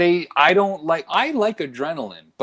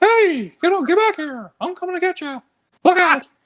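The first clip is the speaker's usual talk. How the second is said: unbroken, very high-pitched, squeaky cartoon voice. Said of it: "a voice that clearly just has this dysfunction of never going through puberty".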